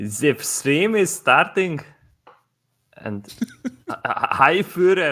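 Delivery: clumsy, comically bad, high-pitched put-on German accent. As the stream starts, the speaker says hello in a comically bad german accent. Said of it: "your German accent is like comically bad".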